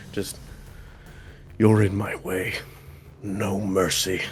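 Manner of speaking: quiet muttered whisper. As he gets out of the water, he hears Dolus in his head: whispering under breath. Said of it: "whispering under his breath".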